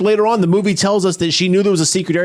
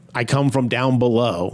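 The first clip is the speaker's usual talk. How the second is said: ordinary talk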